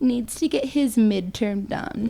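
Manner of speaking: put-on pitiful, poor-me tone, soft and sad. Speaker retells what he told her one night: mock sad pity voice. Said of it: "sad pity voice".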